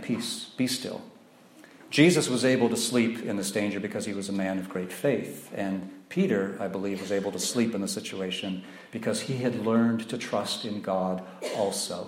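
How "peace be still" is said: mock unstrained, calm, soft, authoritative, commanding tone. Retelling how Jesus woke in danger and spoke, acting out a calm authoritative command. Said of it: "just a calm, authoritative command".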